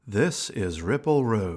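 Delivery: radio announcer delivery. Host introducing the ongoing series about being a medium: announcer voice. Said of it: "I have the announcer's voice too".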